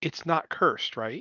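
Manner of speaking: softly spoken, very quiet and hushed, under the breath. A character pulls a companion back to ask privately: very quiet voice. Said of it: "and very quietly say".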